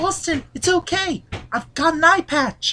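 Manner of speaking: high-pitched British accent.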